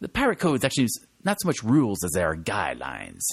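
swooping pirate impersonation voice. Retelling a scene with Elizabeth Swann, quoting a pirate; pirate impersonation. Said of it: "That's my best pirate impersonation".

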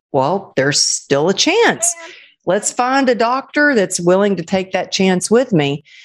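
usual speaking voice

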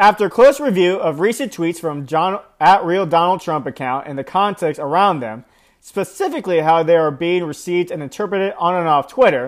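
ordinary talk

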